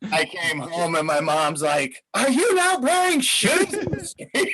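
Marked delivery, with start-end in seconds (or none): 2.1-4.6 very high, outraged, furious scolding voice. Retelling his mother scolding him when he came home, imitating an angry mom. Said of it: "she's so pissed off".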